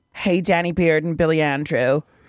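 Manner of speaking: put-on American accent. Reading a listener's letter aloud on a podcast, in an American accent. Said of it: "Should I read this in an American accent".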